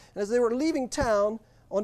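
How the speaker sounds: ordinary delivery, nothing marked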